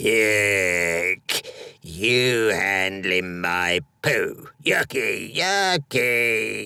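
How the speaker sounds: slow, drawn-out, disgusted, repulsed creature voice. Narrator reading the Goldlock's reply to Edwin handling the gold, Goldlock creature voice. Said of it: "a 3-foot-tall, hairy yellow thing came walking out of the ferns and began attacking the bear's belly with a sharp stone. It had the snout of a pig, and all its yellow fur was tied up in golden bunches".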